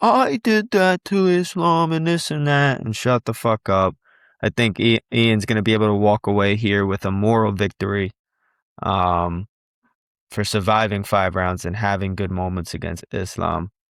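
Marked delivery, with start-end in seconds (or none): 0.0-2.8 whining, high-pitched voice. Predicting a fighter's talk on the mic after the fight: mocking Ian's whiny voice. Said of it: "his little fucking whiny voice".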